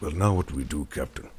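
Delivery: deep, soft basso profundo rumble of a giant. Narrating a story, a huge tattooed crewman asks the captain: deep basso profundo voice. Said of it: "in its deep, basso profundo voice says".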